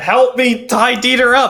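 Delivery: screaming at the top of his voice. Voicing a character in the scene who is calling others for help: screaming at the top of his voice. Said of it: "screams it at the top of his voice".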